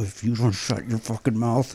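low, soft, slow grumbling. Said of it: "John Sterling doesn't like the accent".

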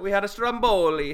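loud, high, fake Italian accent. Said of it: "so funny to do stupid Italian accents".

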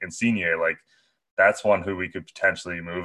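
normal talking voice

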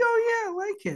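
very high-pitched, fake-sounding put-on voice. Describing mood triggers, the speaker quotes someone answering in a high-pitched voice. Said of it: "they speak in high-pitched voices".

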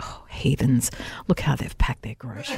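very low, under-the-breath muttered murmur. Describing Chris judging people's car boots, imitating Chris muttering. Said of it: "under his breath he'll go".

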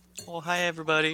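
high, sweet and innocent-sounding voice. A guest greets the show's audience on joining, sweet and innocent. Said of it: "You sound so sweet and innocent".

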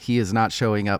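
ordinary delivery

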